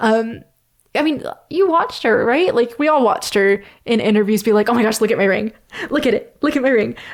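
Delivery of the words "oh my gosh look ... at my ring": giddy, thrilled, fast excited gushing, showing off. Acting out how she was in interviews: imitating someone excited. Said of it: "she's so excited".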